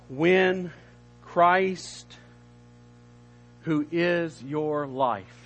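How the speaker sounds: very slow, deliberate reading, each word separately. Reading a Bible verse aloud to listeners: reading slowly. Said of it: "I'm going to read this slow".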